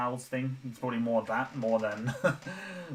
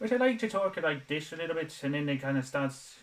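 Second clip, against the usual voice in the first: brief put-on Irish accent, higher pitch; 5 semitones higher than usual. Streamer tries out a put-on voice for viewers, accidental Irish accent. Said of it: "That's just that's just an Irishman".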